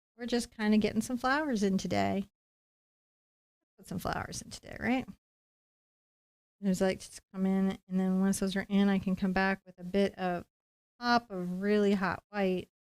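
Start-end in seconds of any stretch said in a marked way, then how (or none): 3.8-4.8 very soft asmr whisper close to mic. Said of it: "I'm doing an A S M R bit".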